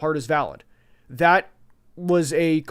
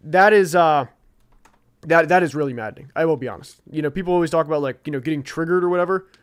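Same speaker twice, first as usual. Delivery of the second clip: normal talking voice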